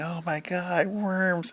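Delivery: very slow, high, stretched-out scream. Retelling how workers on the belt reacted to loose worms: imitating women screaming. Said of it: "were just screaming".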